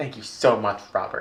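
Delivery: re-enacted sarcastic, rude-sounding tone. Re-enacting a thank-you that the listener took as sarcastic, retelling a sarcastic-sounding thanks. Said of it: "It does sound so rude".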